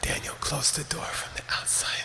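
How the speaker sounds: soft, whispered, low voice. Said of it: "Then you lower your voice".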